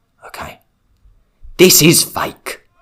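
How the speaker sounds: speaking softly.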